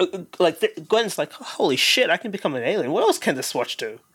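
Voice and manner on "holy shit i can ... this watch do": ordinary delivery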